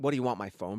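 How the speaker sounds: ordinary delivery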